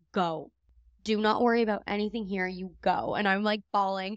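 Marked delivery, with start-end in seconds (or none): none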